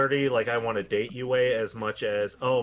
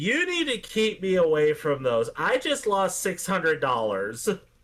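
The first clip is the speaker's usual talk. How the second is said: put-on drunk woman voice, higher pitch; 6 semitones higher than usual. Retelling what a lady said to the bartender: imitating a drunk woman. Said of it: "this lady walks up absolutely hammered".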